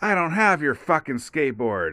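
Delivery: blunt, mild, emphatic swearing, acted out. Retelling answering a kid who demanded his skateboard back: imitating own past loud yell. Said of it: "I said it real loud to him".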